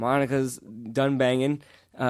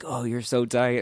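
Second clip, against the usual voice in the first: put-on whisper. Retelling what was overheard through a door: imitating Monica whispering. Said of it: "I heard Monica whispering things like".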